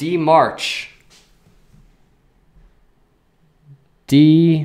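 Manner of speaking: loud yell right into the microphone. A streamer calling out to a viewer in the chat, yelling into the microphone. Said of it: "I'm like yelling into the microphone".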